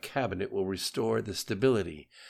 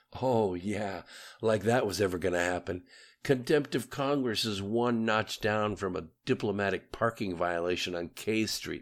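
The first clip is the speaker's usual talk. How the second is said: ordinary delivery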